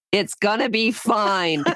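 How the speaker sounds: frustrated, drawn-out tone. Imitating the other speaker reassuring her about a puppy: imitating frustrated Robin. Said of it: "you got so frustrated with me the one time".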